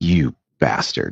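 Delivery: soft, hushed, mild low-key tone. Retelling how someone on a show said a line: imitating a soft "you bastard". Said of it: "somebody said it more softly and not screaming".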